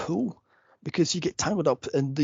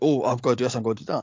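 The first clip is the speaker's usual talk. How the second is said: swaggering, macho tough-guy bravado. Retelling how a stuntman talked before the stunt: imitating a macho stuntman. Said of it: "he was all macho and such".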